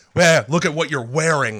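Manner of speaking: put-on intimidating, threatening, menacing tone. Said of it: "He also says it so menacingly".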